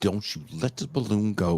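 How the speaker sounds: spoken through clenched teeth, lips barely moving. Retelling a mom warning her kid: imitating a mom talking without moving lips. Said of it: "I'm not gonna move my lips in front of these people".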